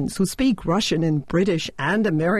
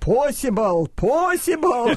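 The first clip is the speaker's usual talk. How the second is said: put-on heavy, pitched-up Russian accent; 6 semitones higher than usual. Retelling Raika's retort to her friend, in a heavy Russian accent. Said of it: "Raika retorted with a heavy Russian accent".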